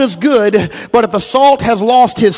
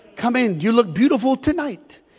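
put-on Italian accent, head waiter voice; 7 dB quieter than usual. Retelling how he greeted the people coming in, in an italian accent. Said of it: "in his Italian accent".

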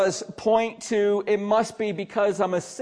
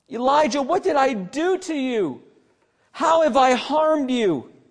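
put-on reproachful, pointed accusing tone; 4 semitones higher than usual. Acting out a weeping woman's words to Elijah, acting out an accusing yell. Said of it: "because this is accusatory tone".

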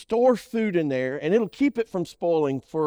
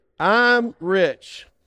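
emphatic, said with conviction, louder; 5 dB louder than usual. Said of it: "let's say it like we mean it".

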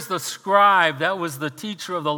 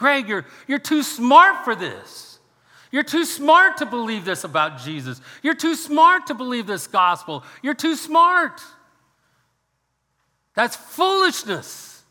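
mock hectoring shout, high, raised and insistent; 6 semitones higher than usual. Retelling a coworker following him around a job site: imitating someone yelling. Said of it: "he's yelling at me".

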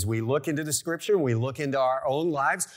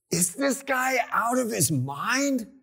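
grumbling aside, loud enough to be overheard; 9 semitones higher than usual. Acting out what Eve should have said to Satan, mock muttering, but loudly. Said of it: "muttered under her breath, but loudly".

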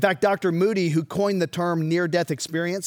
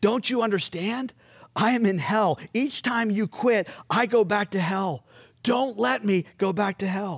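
acted pleading, slower; 3 semitones higher than usual. Narrating a resuscitated man's words to his doctor, retelling his pleading. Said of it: "the man pleaded".

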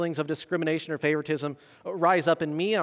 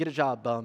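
mock mutter under the breath, lower; 6 semitones lower, 4 dB quieter than usual. Retelling a parent's remark while passing a homeless man: imitating a mutter under the breath. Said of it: "saying this under their breath".

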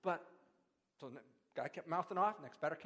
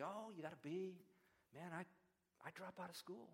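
mocking, sarcastic, teasing jab; 10 dB quieter than usual. Retelling what friends said at dinner: imitating friends' sarcasm. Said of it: "they tried by sarcasm to say".

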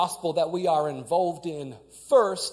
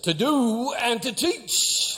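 high, preaching bishop voice with pulpit cadence; 6 semitones higher than usual. Speaker quoting a bishop's teaching, in bishop voice. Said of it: "that's my bishop voice".

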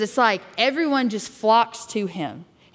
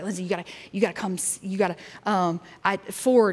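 put-on panicked voice, quieter; 2 semitones lower, 4 dB quieter than usual. Retelling how a fidgety intern burst in: imitating someone freaking out. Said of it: "fidgety, he's, like, freaking out".

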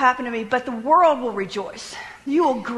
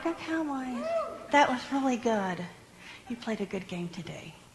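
subdued, swooping, unexcited tone; 9 dB quieter than usual. Showing the way not to cheer a win: flat unexcited. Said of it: "I'm not gonna be going".

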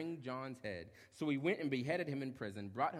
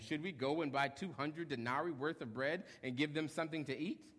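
ordinary delivery

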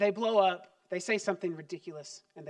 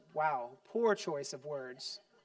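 ordinary delivery

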